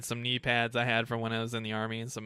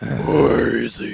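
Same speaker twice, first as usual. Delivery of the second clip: dramatic superhero voice, much louder; 10 dB louder than usual. Recalling handing out candy while wearing a cowl, in an overly dramatic Batman voice. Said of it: "talking the overly dramatic Batman voice".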